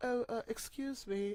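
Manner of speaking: put-on leaning into a slow French accent. Recounting how a game character spoke before being accused, in Mikon's French accent. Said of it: "her like French accent".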